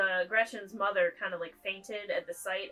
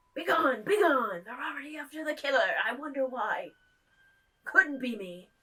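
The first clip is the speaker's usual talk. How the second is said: put-on odd English accent, pitched up; 5 semitones higher, 4 dB louder than usual. Voicing the devil reacting to a killing: devil voice in weird English accent. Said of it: "giving him, like, a weird English accent".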